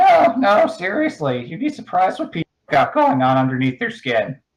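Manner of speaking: animated, sing-song, high swooping little creature voice. The Goblin answers another character's objection: Goblin voice. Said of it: "The Goblin says".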